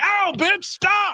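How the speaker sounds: mock yelp of pain, very high pitch. Retelling the moment his friend got bitten, imitating Michael screaming in pain. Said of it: "my friend Michael is screaming like".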